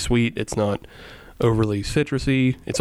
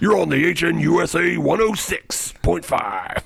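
put-on lousy radio-announcer voice, higher; 5 semitones higher than usual. One host jokes about their radio sound; shitty radio voice. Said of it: "that kind of, you know, shitty radio voice, you might as well be like".

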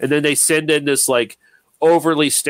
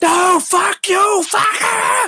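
very high, screeching, shrieking freak-out. Describing a man who freaks out when provoked, imitating his screeching. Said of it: "where he just starts screeching".

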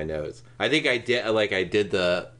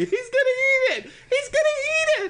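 put-on very high shrill screaming, "eat" drawn out; 3 dB louder than usual. Retelling a woman's outburst on a flight, retelling a woman screaming.

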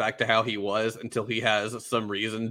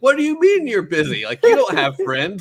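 put-on angry voice, higher and louder; 9 semitones higher, 10 dB louder than usual. Retelling a character's reply when he is told no: imitating someone mad. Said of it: "And then he's all mad".

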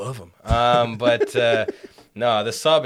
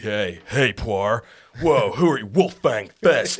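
put-on surfer bro voice. Imitating a dub's voice acting to another speaker: surfer bro Yamcha voice. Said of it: "Surfer Bro Yamcha".

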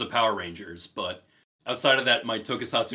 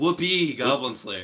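sarcastic tone; 2 semitones higher than usual. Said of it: "I was very sarcastic there".

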